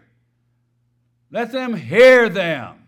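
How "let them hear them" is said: "hear" stressed hard, loud and slow. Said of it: "I emphasize that word hear".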